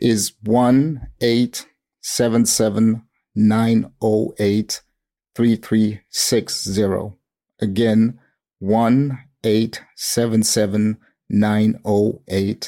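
slow, deliberate read-out, each item said carefully. Asked about reporting fraud or scams, the speaker gives a phone number: slow, deliberate delivery. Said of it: "I'll say it slowly".

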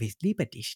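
soft-spoken put-on voice. Showing how the Anton voice sounds: soft-spoken Anton voice. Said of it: "It's very soft-spoken".

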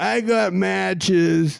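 high, very slow, drawn-out stoner voice.

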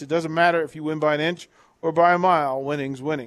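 ordinary talk

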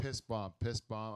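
ordinary talk

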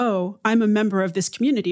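normal talking voice

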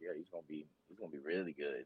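hushed murmur. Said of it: "I'm like".

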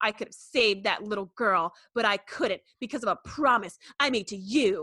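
put-on snotty voice. Retelling a scene where Riker talks to Picard: mock-snotty Riker impression. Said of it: "Riker is a total snot".

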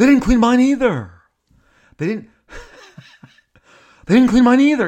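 acting exasperated. Speaker recounts a hotel encounter, retelling another guest's exasperated complaint. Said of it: "He was exasperated".

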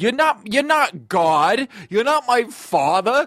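man's high, slow, indignant outburst, shouted.

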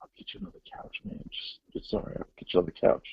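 real quiet, soft, whispered murmur. Speaker retells what a man said to him after a stare, spoken quietly. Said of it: "he said real quietly".

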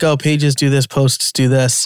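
ordinary delivery

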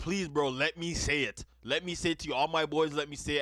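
mock pleading, begging tone. Retelling what a man met only twice said to the speaker, acting out someone begging. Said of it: "was like begging me".

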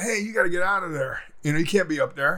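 ordinary delivery

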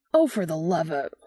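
sudden blurted outburst. A man, teased about bringing his usual slick, blurts out. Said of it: "Dean blurts".

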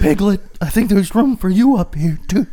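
put-on creepy, old-sounding character voice. Voicing Winnie the Pooh calling to Piglet, in a creepy old voice. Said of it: "Winnie the Pooh's got a creepy old voice".

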